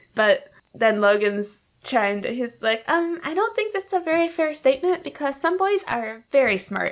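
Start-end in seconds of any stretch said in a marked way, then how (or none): 2.8-6.9 put-on high, pitched-up, protesting boy's voice. Recounting a boy's reply when told boys suck: imitating Logan's high voice. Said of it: "your voice was not as high as Logan's voice".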